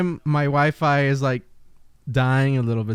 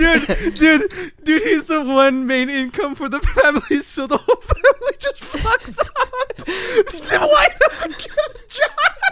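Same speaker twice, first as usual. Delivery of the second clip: garbled, incoherent laughing mumble, higher and louder; 4 dB louder than usual. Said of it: "I can't understand what he's saying".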